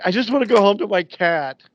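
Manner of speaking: put-on high, loud, teary, crying girl's wail. Speaker quotes a crying girl who wants to go home; imitating a crying girl. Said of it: "this crying girl".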